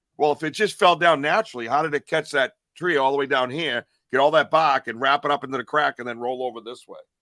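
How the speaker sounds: ordinary talk, nothing marked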